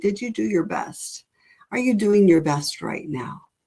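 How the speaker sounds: play-acted compassionate, gentle, loving tone. The speaker recalls talking to their reflection while crying; imitating compassionate, loving self-talk. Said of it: "with compassion and with love and say".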